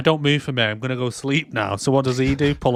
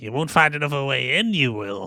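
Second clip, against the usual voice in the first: put-on eerie, creepy old crone's voice. Recapping a scene, repeating the hag's words in a creepy hag voice. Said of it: "creepy ass voice again, the hag".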